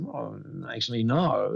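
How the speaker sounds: ordinary talk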